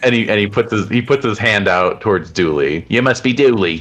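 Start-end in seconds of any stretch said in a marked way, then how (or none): 2.9-3.8 put-on higher-pitched Australian accent. Voicing the man greeting dooley with a handshake: australian accent. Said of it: "dresses you with an Australian accent".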